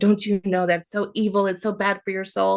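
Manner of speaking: angry, mad, upset tone. Retelling a babysitter upset at finding the speaker's D&D book: imitating someone mad. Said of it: "she got mad and upset".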